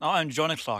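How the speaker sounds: clumsy, bad put-on British accent. Co-host introducing himself by name in a bad put-on British accent. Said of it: "one of their British accents is much better than the other one".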